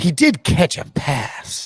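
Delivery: put-on sour, disgusted, grudging tone. Quoting Pete's reaction from an article he wrote, mock-disgusted. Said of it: "you can read the disgust in Pete's voice".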